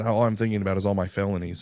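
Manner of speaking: ordinary talk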